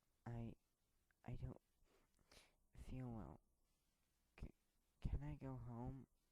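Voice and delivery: trembling, very hushed, breaking mid-phrase. Reading a story, voicing a character the teacher is trying to comfort: shaky voice. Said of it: "asked in a shaky voice".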